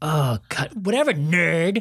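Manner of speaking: mocking, annoying little-girl tone. Imitating a show's younger sibling character, in an annoying little sister tone. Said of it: "It's that tone every line".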